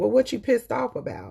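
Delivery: mock casual, offhand tone. Retelling what a bookstore lady asked: imitating a nonchalant remark. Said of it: "she said it so nonchalantly".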